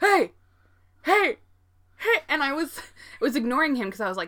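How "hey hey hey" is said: mock yelling, much higher, louder. Retelling a catcaller at a red light shouting into the car, retelling a yell. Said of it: "he starts yelling into my car".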